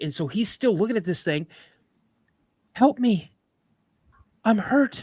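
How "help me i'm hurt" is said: imitated woman's voice, higher pitch. Retelling a story where a creature in the woods calls out: woman's voice. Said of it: "this thing says this in a woman's voice".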